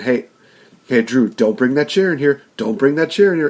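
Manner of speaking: stern, parental scolding tone. Retelling what the referee said about a chair: imitating the referee scolding like a parent. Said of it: "almost like a parent talking to a little kid".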